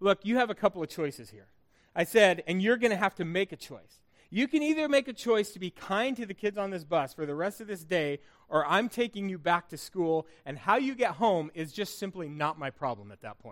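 ordinary delivery

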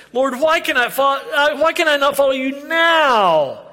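play-acted, high, whiny toddler-style voice. Acting out a demand from verse 37, mock-whiny childlike tone. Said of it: "his whiny demand ... you know this tone of voice".

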